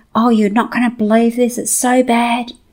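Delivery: mock complaining rant. Retelling what an annoyed stranger said at a delayed flight: imitating someone ranting. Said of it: "ranting, complaining".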